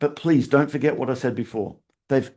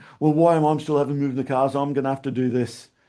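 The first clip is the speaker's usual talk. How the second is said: mock whining, complaining tone. Retelling how trainees complain to a trainer: imitating whinging trainees. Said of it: "they whinge to one of our trainers".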